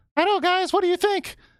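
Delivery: very high cartoon-mouse voice, always smiling. Retelling how a character breaks into a serious scene: imitating Mickey, always smiling. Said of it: "he's just like".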